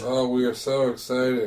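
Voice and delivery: soft, drowsy, low-energy sleepy delivery. Announcing news beside a co-speaker who teases him about it: sleepy. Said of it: "He's very sleepy".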